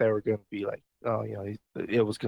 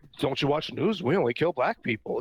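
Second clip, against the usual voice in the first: mocking, sarcastic, pitched-up delivery; 5 semitones higher than usual. Speaker retells what a fired cop said, retelling a sarcastic remark.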